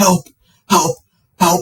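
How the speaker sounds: mock, frantic, high, desperate cries. Retelling being pinned on a bench as people walked past, retelling crying for help. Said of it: "Like literally crying for help".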